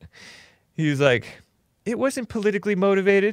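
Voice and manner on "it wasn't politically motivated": put-on pitched way up into a high girly voice. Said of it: "he has, like, this girly voice".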